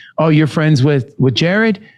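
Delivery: normal talking voice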